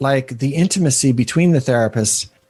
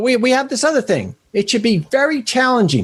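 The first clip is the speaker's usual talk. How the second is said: put-on lawyer voice with Bronx accent; 10 semitones higher than usual. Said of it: "I'm making him sound like a, you know, shyster lawyer from the Bronx".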